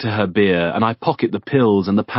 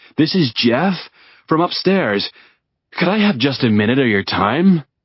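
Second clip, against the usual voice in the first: assumed American voice, higher pitch; 5 semitones higher than usual. Retelling speaking through a door, pretending to be someone from upstairs, in an american accent. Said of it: "using an American accent".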